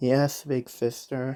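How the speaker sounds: soft, sad, dejected, almost beaten tone. Replying to an older sister, sad, almost defeated tone. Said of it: "in a sad tone, or like a sad, almost defeated tone".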